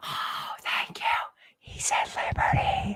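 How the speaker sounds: slow, unvoiced whisper.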